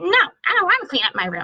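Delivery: put-on whiny child voice.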